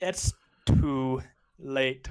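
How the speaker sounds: put-on really broken, heavy broken-English accent. Voicing a character who refuses: broken English accent. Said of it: "really broken English".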